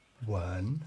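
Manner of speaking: second tone on wen, rising upward. Pronouncing words with their tones: rising second tone on wen. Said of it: "with a sort of inquiring tone, second tone".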